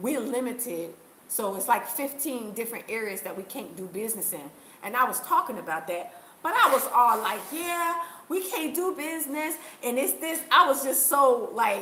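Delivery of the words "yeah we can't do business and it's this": put-on breezy, happy-go-lucky, pitched-up chirp. Recalling talking about business limits for foreigners, imitating own past happy tone. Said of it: "the way I was so happy".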